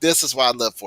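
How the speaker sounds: ordinary talk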